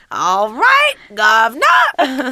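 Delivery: put-on old man voice with Cockney accent. Teased about sounding Cockney, the speaker answers in a My Fair Lady Cockney accent. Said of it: "why do you sound like a 50-year-old Cockney man".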